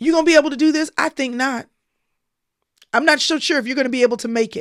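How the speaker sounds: hard, self-doubting voice, rushed. Contrasting the soothing mommy voice with the other one, hard doubting voice. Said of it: "The hard voice says".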